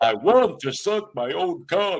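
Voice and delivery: put-on vampire count voice. Acting out what he says, done in a Count Dracula voice. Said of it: "I gotta do it like Count Dracula".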